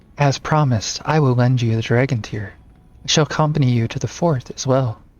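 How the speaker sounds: put-on middle-aged woman voice. Voicing a game character who promises the dragon tear: same voice as for Riddell. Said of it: "the same sort of voice we do for Riddell".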